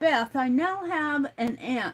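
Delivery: ordinary delivery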